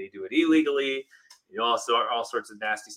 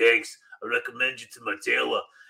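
oily, smarmy, sleazy, slimy delivery. Speaker acts out a scene after a grenade explodes: sleazy voice. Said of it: "he says it with such a sleazy voice".

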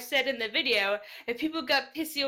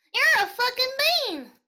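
squeaky, very high, loud cartoon pony voice; 12 semitones higher, 4 dB louder than usual. Asked to call someone a bean, doing it in Apple Bloom's voice. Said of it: "curse at me in Apple Bloom's voice".

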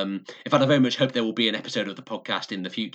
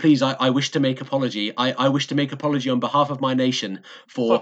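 put-on, halting, broken English phrasing; 3 semitones higher than usual. Recounting a man's stage shtick of apologizing to a crowd: imitating broken english. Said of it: "say in this sort of broken English".

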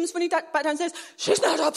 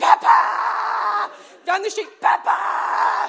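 play-acted lunatic shouting, very drawn out, rough-edged; 3 semitones higher, 4 dB louder than usual. Retelling running down the street after the lost dog, retelling frantic shouting. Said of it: "I'm just like a lunatic".

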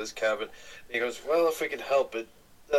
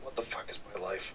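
very quiet, breathy, whispered mutter under the breath; 3 semitones lower, 10 dB quieter than usual. A man watching someone play a self-made string instrument, muttering under his breath. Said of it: "he just mutters".

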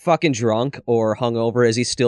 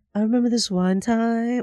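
put-on baby voice. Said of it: "I can't even do the voice".

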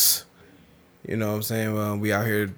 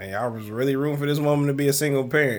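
ordinary talk

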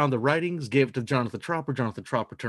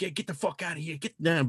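horrible fake Irish accent; 3 semitones higher, 4 dB quieter than usual. Telling a bar joke, voicing the Irish bar patrons, horrible Irish accent. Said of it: "But horrible Irish impression".

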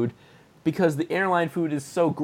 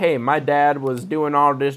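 poorly attempted Southern accent. Retelling a kid's line from a book in a southern accent. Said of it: "I can't do a southern accent".

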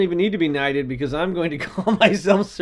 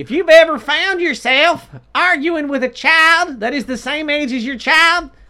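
very high, loud, raised sermon-style preaching voice; 10 semitones higher, 6 dB louder than usual. Trying out a comedy introduction with a co-host, do a Jeff Foxworthy impression that sounds like a preacher. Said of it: "You sound more like a preacher than Foxworthy".

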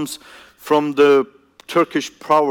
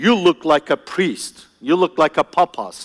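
play-acted cross mother voice, angry scolding. Priest recalls what his mom told him while looking at him, imitating mom's angry voice. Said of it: "telling me with angry voice".

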